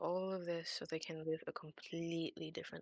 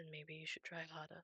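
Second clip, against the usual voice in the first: hushed, very soft half-whisper close to the ear; 11 dB quieter than usual. A character leans down toward a player's ear, half-whispering. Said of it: "leans down towards you and whispers into your ear".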